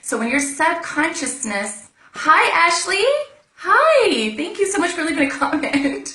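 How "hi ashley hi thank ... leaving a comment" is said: much higher, louder, excited voice. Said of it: "my voice just went up now 'cause I'm more excited".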